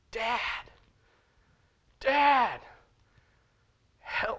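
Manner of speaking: put-on, very high, desperate child's scream. Retelling a story of a child trapped on a burning roof: acting out a child screaming. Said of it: "he's screaming at the top of his lungs".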